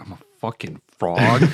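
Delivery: sulky, deflated, dejected, upset, self-pitying complaint. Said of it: "He is so upset".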